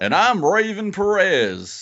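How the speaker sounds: very high, slow, stretched-out swooping sing-song. Introducing oneself at the show's start as someone absent: Raven impression. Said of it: "the most amazing Raven impression".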